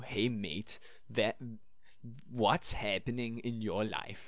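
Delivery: ordinary, plain Danish accent in English. Showing how people on the street in Denmark sound, in a Danish accent. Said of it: "let's just try with the normal Danish accent".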